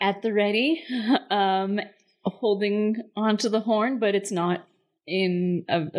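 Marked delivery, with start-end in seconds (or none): none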